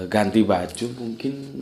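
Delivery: ordinary talk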